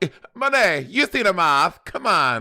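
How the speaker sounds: drawn-out, high, slow Italian mother voice. Teasing another speaker about how they talk: italian mama voice. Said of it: "you sound like some Italian mama".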